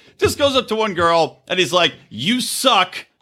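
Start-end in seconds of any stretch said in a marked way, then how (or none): 2.1-3.0 put-on slurred angry outburst. Retelling how a drunk cast member told a girl off: imitating Carl's drunk angry outburst. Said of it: "in his most blacked out, angry time".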